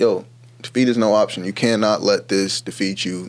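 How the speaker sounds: plain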